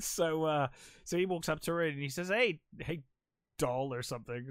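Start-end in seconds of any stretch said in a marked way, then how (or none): 2.3-3.9 mock condescending, sleazy flirting tone. Retelling a film scene where a sleazy guy approaches a woman: imitating a condescending sleazy guy. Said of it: "something condescending".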